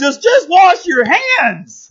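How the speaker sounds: high-pitched yelling. Retelling how a scientist yelled at a conference before being hauled off: imitating someone yelling. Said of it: "he's yelling like".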